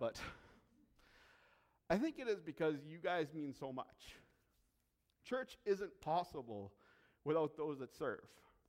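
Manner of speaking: soft voice choked up, catching with emotion. Speaker thanking those who serve at One Church, choked up. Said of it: "I don't know why I'm getting choked up".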